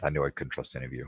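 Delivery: muttering under breath. Voicing Edric as he turns away from the group: muttering under his breath. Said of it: "mutters under his breath".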